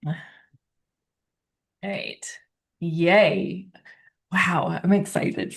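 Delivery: talking through giggles. Excited about the next guest, giggling while talking. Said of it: "now I just got all these giggles".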